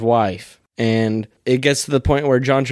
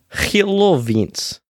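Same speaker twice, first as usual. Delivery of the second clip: put-on Russian-English accent, higher; 7 semitones higher than usual. Greeting another speaker by name: put-on english russian accent. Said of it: "you got a pretty good, uh, English Russian accent".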